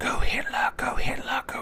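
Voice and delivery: hushed, breathy, slow whispered muttering in background. Imitating what game enemies seem to mutter: muttering Resident Evil 4 peasants. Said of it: "peasants in Resident Evil four mutter sounds like they're going".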